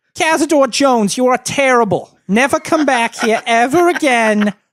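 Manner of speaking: loud, very high-pitched Brooklyn accent. Handing over to his wife [name] to show a better Brooklyn impression. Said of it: "Here's my better Brooklyn impression".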